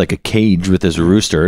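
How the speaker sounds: usual speaking voice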